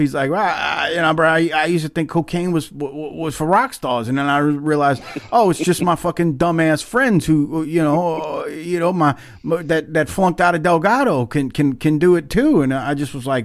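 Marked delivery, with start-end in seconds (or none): none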